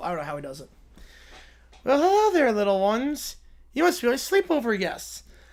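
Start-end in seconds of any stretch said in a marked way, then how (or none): 1.8-5.2 high, pitched-up voice with a whistle through it. Reading a sleepover story aloud, speaker tries MacFarlane's whistling voice. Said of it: "I can't do the whistling voice".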